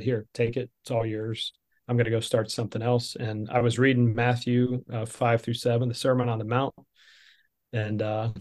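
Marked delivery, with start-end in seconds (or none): none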